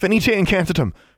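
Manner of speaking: very high, breathless gasp. Narrator reads a girl casting a spell to free her petrified friend, gasped. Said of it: "she gasped".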